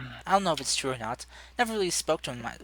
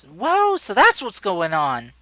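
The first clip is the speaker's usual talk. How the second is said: put-on very loud, high, swooping young girl's voice; 7 semitones higher, 10 dB louder than usual. Voicing young Lei, popping into the discussion: young Lei's voice. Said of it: "young Lei's voice popping in".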